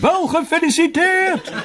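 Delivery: shrill, high-pitched shouting. Narrator reads himself shouting into a very old man's ear trumpet: shouting into an ear trumpet. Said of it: "schreeuwde in zijn oor".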